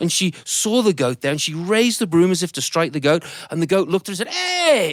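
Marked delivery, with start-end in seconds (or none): none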